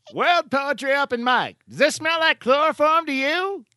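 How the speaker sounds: put-on very high, old-time radio announcer voice. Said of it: "my 1920s, 1930s announcer voice".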